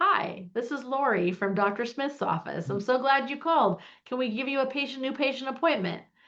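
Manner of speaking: canned automated recorded-message tone. Describing offices that answer calls with an automated voice, imitating an automated phone greeting. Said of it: "using some voice that says".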